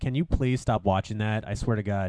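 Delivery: ordinary delivery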